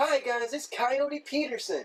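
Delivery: put-on soft, high-pitched, childlike kids-show host voice. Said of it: "this real soft, high-pitched voice".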